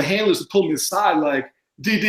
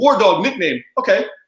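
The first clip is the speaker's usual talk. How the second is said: put-on casual, unbothered, really nonchalant offhand tone. Retelling what the host said when told the nickname: imitating a nonchalant remark. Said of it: "really nonchalant".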